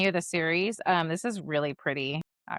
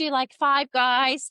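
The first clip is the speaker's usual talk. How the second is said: put-on high, raised Australian accent; 7 semitones higher, 5 dB louder than usual. Retelling an interviewer's question to two actors in a clip, australian accent. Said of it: "she has like an Australian accent or something".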